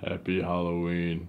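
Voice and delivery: deep butler monster voice. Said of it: "Lurch-sounding weirdo".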